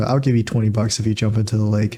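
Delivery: plain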